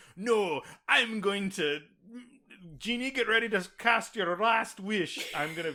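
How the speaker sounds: high-pitched Scottish accent, cartoon duck style. Describing a plot where the character reassures the guys, Scrooge McDuck voice.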